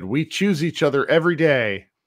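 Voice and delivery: snide, dripping sarcasm with put-on sincerity. Quoting own tweet to another speaker: retelling a sarcastic tweet. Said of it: "let me be sarcastic and an asshole".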